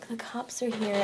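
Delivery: hushed mutter under the breath. Retelling telling others the cops arrived: imitating saying it under breath. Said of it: "I just say it under my breath".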